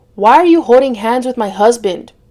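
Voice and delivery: plain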